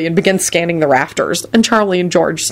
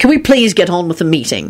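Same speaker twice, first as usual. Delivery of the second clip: usual speaking voice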